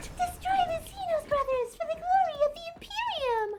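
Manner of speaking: put-on high girlish shout. Attempting a space marine's shouted line, in a Princess Peach-like girly voice. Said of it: "That's Princess Peach".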